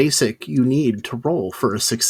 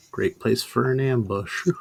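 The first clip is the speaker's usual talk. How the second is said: muttered under one's breath, quieter; 6 dB quieter than usual. Voicing a character remarking on a river stop: muttering under breath. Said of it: "Just under my breath".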